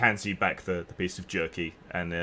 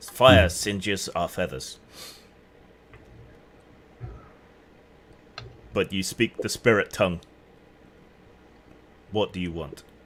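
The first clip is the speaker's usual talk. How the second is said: halting, struggling speech, words forced out; 4 dB louder than usual. A feathered creature turns and answers in the spirit tongue, halting, struggling to form words. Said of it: "he he turns around and haltingly".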